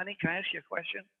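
quick, confiding, hushed stage whisper. Leaning across a crowded restaurant table to one's wife, retelling a half-whisper. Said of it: "And I'm whispering".

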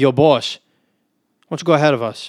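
put-on thickest possible New York accent. Retelling inviting a dad with little kids to go ahead, heavy new york accent. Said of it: "in the most New York accent ever".

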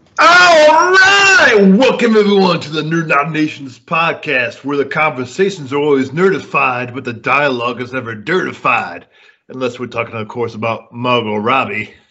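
pitch swinging wildly and badly. Opening the Nerd United Nations podcast, in a horrible Dr. Teeth impression. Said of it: "my horrible Dr. Teeth impression".

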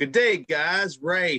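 ordinary delivery, nothing marked

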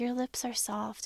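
put-on little girl voice. Recapping a scene, mimicking Lilith's little girl voice. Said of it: "this little girl voice".

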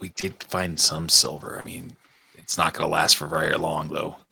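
soft aside muttered under the breath. Looking back at everybody in the group, a character is muttering under breath. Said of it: "under my breath".

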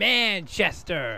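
"Manchester" pronounced in an American accent. Showing how they would say it in America: American accent on 'Manchester'. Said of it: "as you would say in America".

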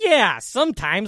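put-on sarcastic tone. Mimicking how a buddy answered a question, mock-sarcastic. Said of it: "you said it like this. ... like as if you were just rolling with it".

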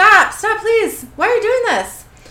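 desperate, very high, very loud, shrill frantic yell. Narrator voices a man struggling against men holding him, yelling out frantically. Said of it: "Chester yells out".

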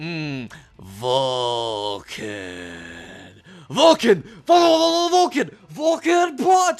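deep, gruff, very slow, menacing villain drawl. Imitating a villain who uses his own name as a sound effect: imitating gruff evil villain voice. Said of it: "really good, gruff, evil tone of voice".

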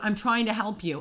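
ordinary talk, nothing marked

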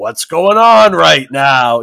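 loud, bewildered, baffled dad voice. Retelling walking into a chaotic kitchen: imitating own confused dad voice. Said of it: "time to put on the dad pants and be like".

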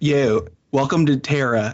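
slow, put-on Philadelphia accent. Taking a turn at a movie line, in a Philadelphia accent. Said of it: "I'm trying to get the Philly".

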